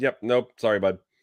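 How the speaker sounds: plain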